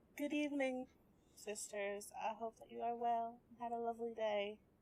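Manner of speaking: mock sugary-sweet voice, as sweet as possible. Describing Marta greeting her sisters, the speaker acts it out in a put-on sweetest voice. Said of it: "in the sweetest voice that she can muster".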